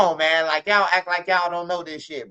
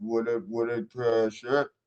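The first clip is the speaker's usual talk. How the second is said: put-on hype DJ voice, lower pitch; 7 semitones lower, 6 dB quieter than usual. Joking around, the speaker repeats the line in DJ Scoop voice. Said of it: "in the D J Scoop voice".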